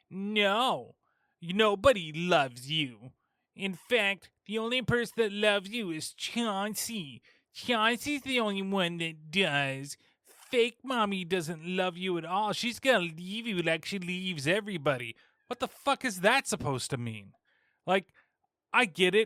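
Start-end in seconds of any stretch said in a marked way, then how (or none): 0.1-15.1 stupid little voice with "no" drawn out. Retelling a film's taunting line: stupid little voice like Alice. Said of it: "the stupid little voice that sounds like Alice".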